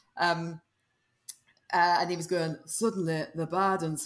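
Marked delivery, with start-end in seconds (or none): 2.7-4.1 imitated, downbeat, glum northern accent. Retelling the collaborator's voiceover: imitating Alex's downbeat northern accent. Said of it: "got this really downbeat sort of northern accent".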